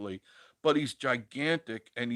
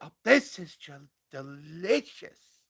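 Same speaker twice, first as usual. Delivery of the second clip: put-on high-pitched girly voice, much higher; 4 semitones higher than usual. Acting out a YouTuber who eats on camera, imitating a high-pitched girl's voice. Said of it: "He's got a high pitched girl's voice".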